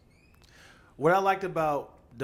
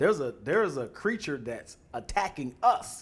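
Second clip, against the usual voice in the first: normal talking voice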